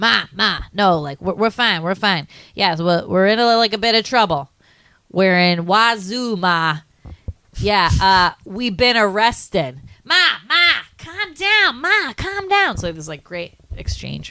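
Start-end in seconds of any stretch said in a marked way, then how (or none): 0.0-12.8 put-on slow, high, sing-song, swooping New York accent. Retelling a great police-station movie scene, doing Ralph Macchio's New York accent. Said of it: "great Ralph Macchio like New York accent".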